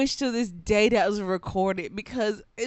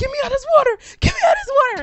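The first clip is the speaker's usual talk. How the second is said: very high, very loud, shrill, frantic, rattled-off screaming; 9 dB louder than usual. Retelling a relative's panic in the water: imitating someone screaming in panic. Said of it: "completely starts screaming, hollering".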